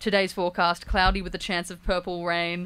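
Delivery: ordinary delivery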